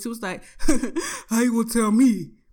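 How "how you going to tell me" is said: louder, laid-back, cool baritone voice. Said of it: "like, cool baritone type voice".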